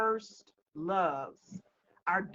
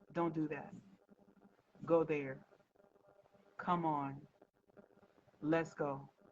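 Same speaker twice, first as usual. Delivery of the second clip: very quiet, low, meek, effortless voice; 4 semitones lower, 7 dB quieter than usual. Speaker retells how their husband talks to someone, very quietly. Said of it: "he just tells her very quietly".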